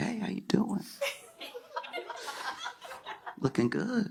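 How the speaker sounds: breathy, hushed, whispered dog voice. Acting out a house dog greeting a police dog at the park: voicing a house dog. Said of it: "The house dog is like".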